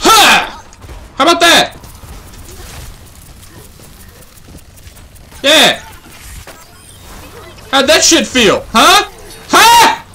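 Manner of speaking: gloating yell. Playing a game on stream, taunting an opponent after a kill, yelling. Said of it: "I'm yelling again".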